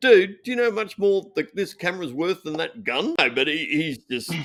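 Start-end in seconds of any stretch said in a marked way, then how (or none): 0.0-3.2 mock, high, heated screaming. Retelling screaming at the armorer over a dropped gun: retelling own screaming. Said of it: "started screaming right in his face".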